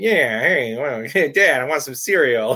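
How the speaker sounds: high cartoon rabbit voice. Retelling talking like the cartoons until age seven: Bugs Bunny voice. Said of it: "I talked like Bugs Bunny".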